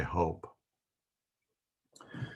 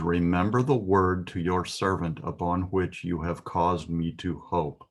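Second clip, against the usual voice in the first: ordinary talk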